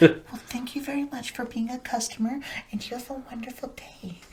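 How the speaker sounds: hushed, very quiet, very high little-mouse voice. Speaker imitates a woman working from home, quiet customer service voice. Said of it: "She's like so quiet".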